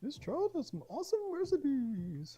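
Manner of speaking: very high, swooping sing-song voice. Speaker looks over a very old recipe: Julia Child impression. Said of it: "That's my Julia Childs voice".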